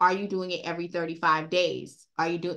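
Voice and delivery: ordinary talk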